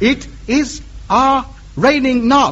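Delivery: slow, careful, puzzled delivery in halting broken English.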